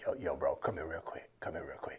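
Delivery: low, hushed secret whisper. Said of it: "you gonna whisper".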